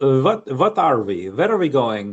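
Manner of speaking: put-on thick Slavic accent in English. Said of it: "a very good Slavic accent".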